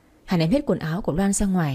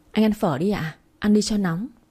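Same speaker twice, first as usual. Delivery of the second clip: ordinary delivery, nothing marked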